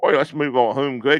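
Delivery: loud, clumsy, bad put-on English accent. Speaker mocks a man trying to sound English, in a bad put-on English accent. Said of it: "I'm trying to do a cu- accent".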